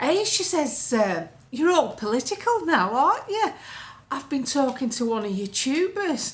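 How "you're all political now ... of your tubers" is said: put-on strong, broad, laid-on Lancashire accent. Speaker retells what Pauline said on meeting again: Pauline's broad Lancashire voice. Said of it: "she's dead Lancashire. I have to do her voice".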